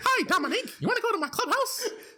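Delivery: very high-pitched cartoon mouse voice. Asked by another speaker to say goodbye in a Mickey Mouse voice. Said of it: "In your Mickey Mouse voice".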